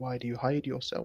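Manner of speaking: soft, quiet, hushed half-whisper. A player's character gets up close to Ozen and asks him: half-whispering quietly. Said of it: "Gonna whisper quietly".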